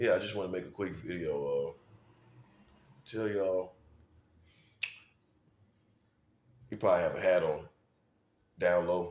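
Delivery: deep, low voice in deepest register. Describing how Michael Jordan talks, the speaker acts him out: Michael Jordan impression. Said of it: "got that deep voice".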